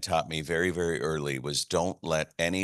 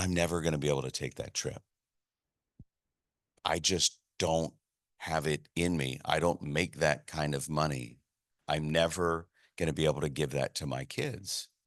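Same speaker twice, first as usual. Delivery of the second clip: put-on sad voice, quieter; 4 dB quieter than usual. Retelling what a friend said when he called: imitating Joe's sad voice. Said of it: "you could hear the sadness in his voice".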